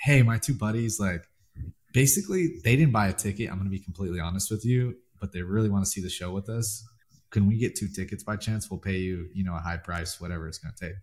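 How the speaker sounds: normal talking voice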